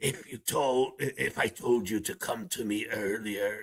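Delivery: rough, raspy, rasping voice. Explaining a line, imitating how the man who says it rasps. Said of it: "kind of his voice is like that".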